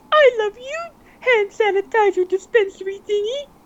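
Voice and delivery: very high puppet diva voice. On a podcast, you show the others that you can nail your impression, Miss Piggy voice. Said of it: "is my Piggy impression? I can nail it".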